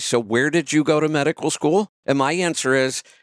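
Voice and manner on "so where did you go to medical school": sarcastic tone, acted out. Retelling what doctors have said to the speaker: imitating a sarcastic doctor. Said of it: "and sarcastically say".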